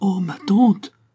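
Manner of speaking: choking, suffocated, high, loud outcry. A niece cries out to her aunt, crying out, choking. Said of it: "s'écria Geneviève, suffoquée".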